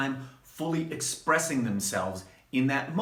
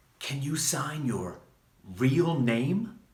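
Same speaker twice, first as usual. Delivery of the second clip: put-on whispering voice. Retelling what a fan asks at book signings: imitating a fan whispering. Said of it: "whisper to me".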